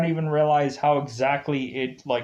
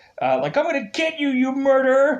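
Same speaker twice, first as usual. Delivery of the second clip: mock angry shouting, much higher, slower; 11 semitones higher, 4 dB louder than usual. Speaker recounting a scene where a man shouts at the phone, imitating angry shouting. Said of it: "him like shouting at the phone".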